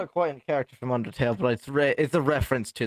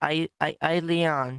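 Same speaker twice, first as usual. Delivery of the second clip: put-on higher-pitched stuttering child voice; 4 semitones higher than usual. Speaking as the eight-year-old persona Leon, giving its name: stuttering. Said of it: "You have, like, a stutter?".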